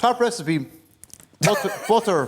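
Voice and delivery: speaking with mouth full, chewing mid-sentence. Speaking on live television while eating someone's bread, talking with mouth full. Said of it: "sorry, I'm still eating your bread".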